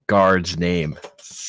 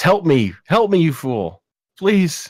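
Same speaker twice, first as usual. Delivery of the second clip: put-on shouting, much higher, louder; 10 semitones higher, 4 dB louder than usual. As a guard looks into the cell, a character shouts in the other guard's voice. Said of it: "He just shouts out with the other guard's voice".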